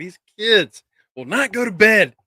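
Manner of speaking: high, frazzled, stressed-out voice at wits' end. Imitating a wrestler as a stressed babysitter: imitating a stressed babysitter. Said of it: "She's like a stressed babysitter".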